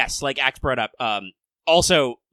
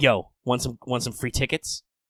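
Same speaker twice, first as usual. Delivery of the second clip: put-on laid-back cool voice, quieter; 4 dB quieter than usual. Acting out a character greeting the group: imitating Melt playing it cool. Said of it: "She's cool as ice, baby".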